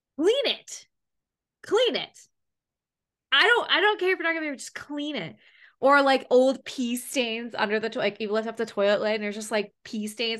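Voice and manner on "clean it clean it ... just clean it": mock furious, insistent, high-pitched angry yelling. Recounting a complaint to them, retelling screaming at them. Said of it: "I like screamed at them".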